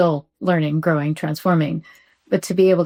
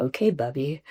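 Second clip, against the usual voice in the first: mock mutter under breath, quieter and lower; 3 semitones lower, 7 dB quieter than usual. Parent retelling what her younger son said, imitating a mutter under breath. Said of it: "under his breath".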